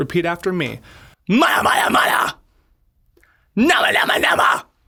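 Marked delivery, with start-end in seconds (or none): 1.3-4.6 vocal fry scream, middle range, higher and louder. Showing a vocal exercise to repeat: fry screaming, middle range. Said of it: "combine these tongue twisters with the fry screams".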